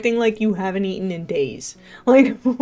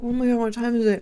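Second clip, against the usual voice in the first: near-panicked, half-panicked delivery; 3 semitones higher than usual. Retelling waking at two thirty in the morning, retelling own near-panic. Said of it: "Like almost panicking".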